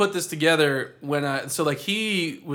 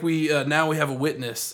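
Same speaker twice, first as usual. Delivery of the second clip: imitated excited, unsettling character voice. Retelling the laundromat guy's line from a scene: imitating an excited, unsettling character. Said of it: "all excited".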